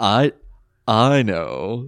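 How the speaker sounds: mock suggestive delivery. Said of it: "he says it in a tone".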